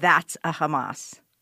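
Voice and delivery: put-on Israeli-accented voice. Retelling what a man at a farmer's market said to his son, Israeli accent. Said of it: "said in his Israeli accent".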